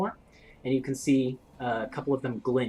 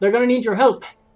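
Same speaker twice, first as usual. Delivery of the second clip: put-on dwarf woman voice, higher and louder; 10 semitones higher, 12 dB louder than usual. Voicing the dwarf woman who guards the boat: dwarf woman voice. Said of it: "the dwarf woman ... says".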